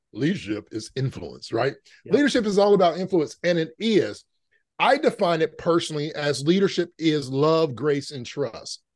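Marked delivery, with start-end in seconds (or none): 0.2-1.6 very deep, soft, pronouncing voice. Recall what John Maxwell said at a leadership conference, in John Maxwell's deep, deep voice. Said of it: "in his deep, deep voice".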